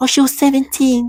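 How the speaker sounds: put-on child-like, very high-pitched. The speaker imitates how a woman sounded: childlike voice. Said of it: "that's what she sounds like".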